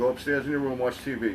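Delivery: ordinary talk, nothing marked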